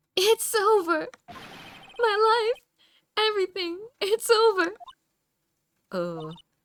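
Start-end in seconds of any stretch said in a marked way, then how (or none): 0.1-4.7 despairing scream, much higher, louder, slower. In a scene, a client screams from over there: screaming in despair. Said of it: "is that your client screaming over there?".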